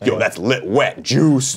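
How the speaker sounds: drawn-out, very slow, cool-guy slang delivery. Doing an impression of a friend: Cool Greg impression. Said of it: "my Cool Greg impression".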